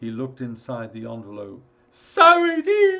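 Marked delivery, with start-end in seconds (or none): 1.9-3.0 shrill, very high, very loud cry. Reading a story, a man looks inside an envelope and is crying out. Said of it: "he cried".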